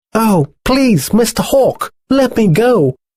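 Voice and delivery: very high, squeaky, sad little mouse voice. Narrator reads the mouse pleading with the hawk, in a squeaky sad little mouse voice. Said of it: "squeaked the sad little mouse".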